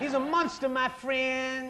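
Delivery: put-on Southern preacher voice. Insisting to a friend about someone he spied on, in a Southern Baptist preacher accent. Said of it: "saying it in a Southern Baptist preacher accent".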